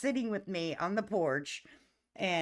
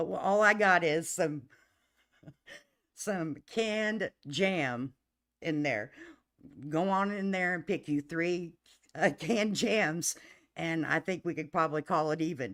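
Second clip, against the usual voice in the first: words broken up by laughter throughout. Retelling what Dad said about the canned jam, laughing while talking. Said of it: "I can't say it without laughing".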